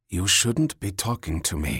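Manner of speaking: whispering. Petra answers Mikhail, who came up behind her; whispered back. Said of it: "she whispered back".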